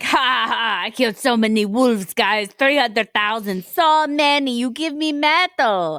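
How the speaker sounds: weird put-on French accent. Acting out a backwards brag that didn't age well, in a weird horny Frenchman accent. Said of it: "It's like a weird, horny Frenchman".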